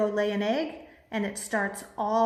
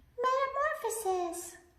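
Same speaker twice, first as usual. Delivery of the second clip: put-on princess voice, much higher and quieter; 6 dB quieter than usual. Leading the group in saying a word in different voices: princess voice. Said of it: "let me hear it in princess".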